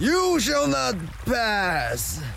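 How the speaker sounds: very high, menacing troll voice, pass drawn out. Voicing a bridge troll blocking the group's way, speak in a bridge troll voice. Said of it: "I think this is a bridge troll. He's tall and large and looking at us quite menacingly".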